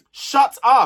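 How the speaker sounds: loud, exasperated, fed-up snap. Reacting to people crying on a show, snapping: telling people to shut up. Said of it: "I'm telling people to shut up now".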